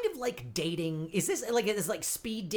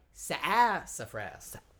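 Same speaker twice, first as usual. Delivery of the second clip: slow, drawn-out "sassafras" with one sound emphasized. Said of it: "See what I did there?".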